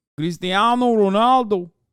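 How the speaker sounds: put-on Portuguese accent. Showing how the accent sounds, in a Portuguese accent. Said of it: "the Portuguese accent".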